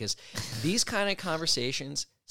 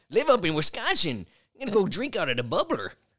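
high, loud, put-on Wisconsin prospector voice; 7 semitones higher, 6 dB louder than usual. Doing a character bit for another speaker: Wisconsin prospector voice. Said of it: "That's the Wisconsin prospector".

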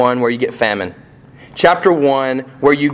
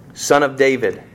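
plain

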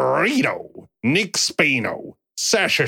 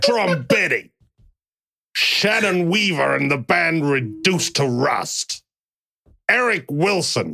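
botched New York accent that doesn't land. Host reading out a list of names, attempting a New York accent. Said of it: "I can't do it, a New York accent".

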